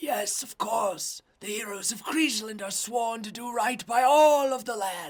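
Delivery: very high, loud, strained raspy voice. Spell-casting character answers a player asking for help fixing his forest, strained, raspy voice. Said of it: "he has this like really like strained, raspy voice".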